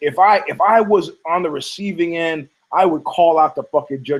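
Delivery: ordinary delivery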